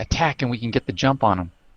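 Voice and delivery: whispering very quietly. Speaking in character to Fail before an ambush: whispering very quietly. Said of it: "I kinda whisper, uh, very quietly".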